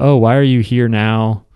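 mock weary, dejected, tired tone. Retelling the sculptor's greeting to a visitor: imitating a tired, bummed voice. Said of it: "just really sort of tired and bummed".

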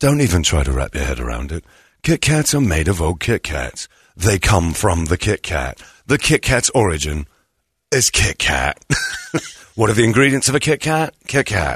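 calm, low, explanatory narrator voice. Retelling a factory documentary seen on the BBC, in a calm BBC narrator voice. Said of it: "you got that BBC voice calmly explaining".

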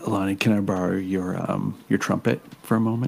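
hushed, discreet, very quiet voice. Voicing a character asking another character for their trumpet: asking very quietly. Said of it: "very quietly ask".

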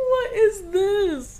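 high squeal of disbelief, squeezed out through laughter.

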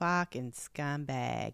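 attempted put-on Rhode Island accent. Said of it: "that was close".

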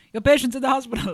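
put-on West African accent. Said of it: "West African, I'm not doing that impression right".

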